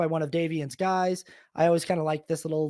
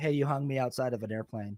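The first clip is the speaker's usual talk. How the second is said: acted icy cold tone with no warmth; 4 semitones lower, 5 dB quieter than usual. Retelling a film's phone call scene: imitating Philip Seymour Hoffman's cold tone. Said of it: "Philip Seymour Hoffman's just so cold on this call".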